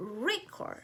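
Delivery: record pronounced REcord, stress on first syllable. Explaining English word stress, giving the noun form; stress on first syllable: REcord. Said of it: "The stress is on the first syllable".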